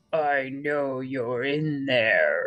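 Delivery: deep rumbling voice. Narrator reads a voice calling to Mr. Tickle hiding in a bush, deep rumbling voice. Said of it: "rumbled a deep voice".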